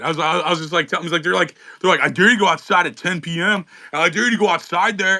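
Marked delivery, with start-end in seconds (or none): 2.0-5.2 mocking imitation of a fearful-sounding voice. Retelling what people say about downtown while making fun of them: mocking imitation of fearful people. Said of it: "I was making fun of the people".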